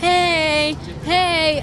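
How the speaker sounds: taunting, high-pitched yell.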